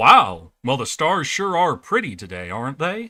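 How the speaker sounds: polished, clean, low Hollywood American accent. Explaining how people fake an American accent, demonstrating a clean, curated Hollywood accent. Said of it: "that very clean, curated Hollywood accent".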